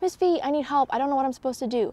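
put-on confused, yelling voice. Retelling calling the instructor during an exercise: retelling own yell for help. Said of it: "I just yelled".

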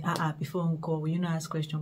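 ordinary talk

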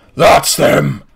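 fiery demon creature voice. Voicing a fiery creature pointing out the group: fiery creature voice. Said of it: "he points at you guys and goes".

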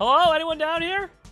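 loud voice. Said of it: "Why do you keep saying my name so loudly?".

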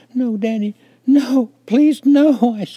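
shrill, very high, very loud sobbing screams. A child begs his father not to spank him, screaming through tears. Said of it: "I screamed through my tears".

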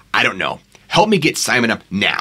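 usual speaking voice

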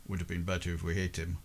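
very low, soft mutter under the breath. Voicing a character walking back, muttering under his breath. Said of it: "mutter underneath his breath".

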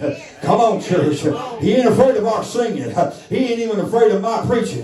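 high, fervent preaching climax, pitch pushed way up.

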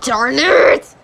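voice growing increasingly angry. Missing a split spare in a bowling game: getting mad. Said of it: "Sorry, I'm getting mad".

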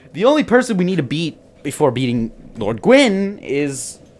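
loud, high-pitched, excited announcer-style delivery.

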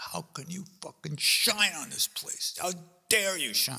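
mock, high, furious raging scream. Retelling how they raged at the sun, reenacting screaming in rage. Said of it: "I'm screaming at the sun".

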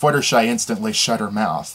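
plain reading voice

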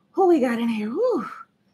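breathless, winded, out of puff. Livestream host greeting viewers as they join, out of breath. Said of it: "I'm out of breath".

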